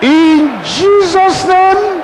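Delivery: high, slow shouted cry.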